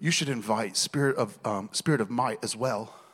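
light put-on British accent. Telling listeners what wisdom said to them, voicing wisdom: slight british accent. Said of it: "almost like in a little British accent".

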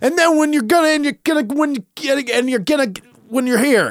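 very high, loud, stumbling, screaming rant. Speaker retells a guy screaming at a kid, imitating a man screaming. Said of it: "one of the dudes was like screaming at this kid".

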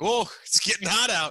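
loud dad-style exclamation. Joking about zip-off pants, imitating a dad. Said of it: "where he'd be like".

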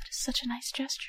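soft whispering. Voicing a character reacting to a pledge: whispering to herself. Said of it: "whispers that to herself".

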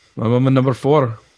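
put-on fake Spanish accent. Saying how many Guinness already drunk: put-on Spanish accent. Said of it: "was that a Spanish accent?".

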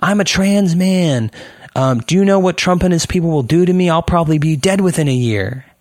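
high, in-your-face yelling, right up close. Retelling a regular performer yelling in his face: imitating someone yelling. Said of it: "yells at me".

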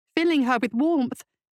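ordinary delivery

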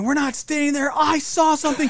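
play-acted all-out screaming, very high and shrill. Retelling a woman screaming at her partner: retelling a scream. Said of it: "she's like just screaming".

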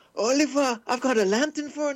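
put-on Welsh accent. Giving in after being asked to do the game character's accent: put-on Welsh accent. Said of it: "please do the Welsh accent".

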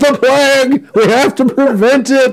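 very high, shrieking, raving yell. Describing a scene, the speaker acts out a man suddenly yelling: retelling someone yelling. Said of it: "He just starts yelling".

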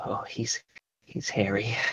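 whispering under breath. Peeking from behind a door, whispering to oneself. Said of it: "I just whispered to myself".

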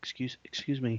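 put-on, slightly tentative, hesitant, faltering politeness. Imitating Kirk saying excuse me to the punk: tentative Kirk voice. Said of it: "he's a little tentative here".

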